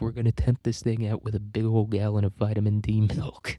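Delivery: ordinary talk, nothing marked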